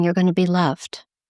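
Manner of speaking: plain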